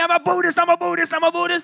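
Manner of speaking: mock high, loud scream, repeated over and over. Retelling how a dude started screaming at him: retelling someone screaming. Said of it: "Just started screaming".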